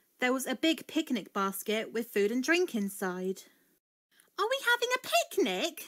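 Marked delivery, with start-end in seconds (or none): 4.4-5.8 eager, excited, very high-pitched voice. Reading a story: back at the field, a character spots a picnic basket, asking excitedly. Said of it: "Daisy asked excitedly".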